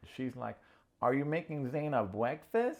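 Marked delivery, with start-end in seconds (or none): 1.0-2.8 mock, pitched-up talking down as to a small child. Retelling how Sandy spoke to J R: imitating talking to a little kid. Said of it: "talking to this dude like he's a little kid".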